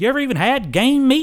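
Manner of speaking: very high, very loud, drawn-out southern drawl. Retelling a woman's remark that became a meme, the speaker imitates her southern drawl. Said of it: "in her southern drawl".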